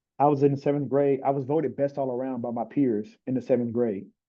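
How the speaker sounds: ordinary talk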